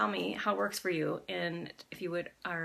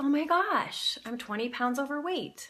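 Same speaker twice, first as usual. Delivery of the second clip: astonished, surprised exclamation, pitched up; 7 semitones higher, 3 dB louder than usual. Demonstrating saying a complaint in different voices, first one surprised. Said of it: "say it as surprised".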